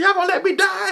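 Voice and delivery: very high, hysterical yell, acted out. Retelling a health scare, imitating own past yelling for help. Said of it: "I was yelling".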